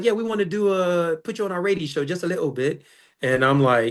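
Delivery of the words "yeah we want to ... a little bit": higher-pitched fake British accent. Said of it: "'cause he's like".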